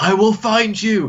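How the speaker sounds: high, slow, drawn-out dramatic action-hero voice. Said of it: "he's just like".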